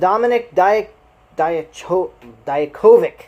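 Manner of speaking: very slow, loud, careful, stumbling syllable by syllable. Struggling to pronounce a hard name, the speaker says it very slowly. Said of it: "I have to say that very slowly".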